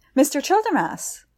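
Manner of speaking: caught-breath gasp. Reading a story, a man spots a figure by the summer house and gasps. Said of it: "he gasped".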